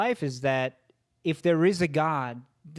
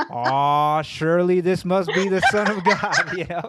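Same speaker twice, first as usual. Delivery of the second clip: louder, awestruck movie-star impression; 2 semitones higher, 6 dB louder than usual. Retelling an actor's line reading after the director asks for more awe, John Wayne saying it with awe. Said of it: "say it with more awe".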